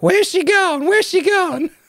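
very high, little squeaky voice. Narrator reading the line of a man thumping his pillow on stage, in a high, squeaky voice. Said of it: "saying in a high, squeaky voice".

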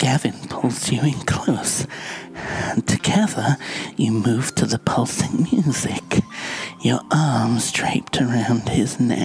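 creepy, whispery ASMR voice. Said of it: "This is the creepiest A S M R voice you can manage".

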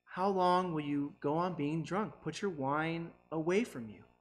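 mild, kindly, gentle tone. Reading verse 14 aloud, spoken in a gentle tone. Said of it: "I'm reading that in a gentle tone".

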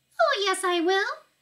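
very high, tiny, squeaky little voice. Narrator reads a story where a tiny voice answers Mrs. TV: tiny squeaky voice. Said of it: "squeaked the tiny voice of Mike TV".

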